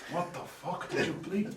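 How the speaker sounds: slow, disbelieving, high-pitched voice. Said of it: "really good Carlos impression".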